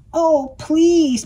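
high, imploring, beseeching, begging tone. Narrator reading the duck's reply after the cat announces going shopping, begging. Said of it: "begged the duck".

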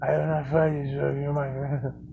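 stoic, very quiet, low, constant half-whisper. Mocking a figure who is always half-whispering: mimicking his constant half-whispering. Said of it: "He's always whispering".

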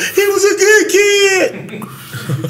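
very high, very slow, weepy, tearful voice. Speaker mocking a mother crying on the news after her kid's death: imitating a crying mother. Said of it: "on the news crying when their kid get killed saying".

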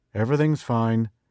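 flat, toneless, even, level delivery. Tom answers the girl asking over the radio if he's all right, flat voice. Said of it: "Tom said flatly".

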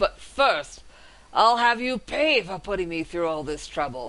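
snarling, growling dragon voice. Narrating a fantasy game, the dragon speaks with a growl. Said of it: "the dragon growls".

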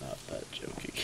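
soft, creaky whispered groan.

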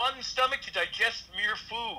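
loud, high character voice. Acting out a line about stomachs in a story, in Alf's loud voice. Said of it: "I'm doing an Alf's loud voice".

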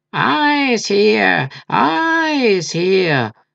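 hollow sepulchral cry, "eyes" stretched out. Narrator reads a cry from Coppelius in the story: hollow, sepulchral voice. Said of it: "cried Coppelius in a hollow, sepulchral voice".

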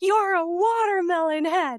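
put-on very high, loud, slow, drawn-out tantrum scream. Retelling a child's bedtime tantrum, retelling a child's scream at him. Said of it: "He screamed at me".

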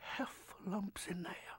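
soft, menacing whisper.

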